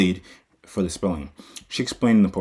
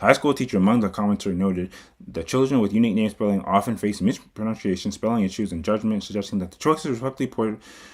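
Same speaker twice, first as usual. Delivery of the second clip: rushed, too-fast reading pace. Reading a forum thread summary aloud to co-hosts, reading too fast. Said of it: "I'm reading a little bit too fast".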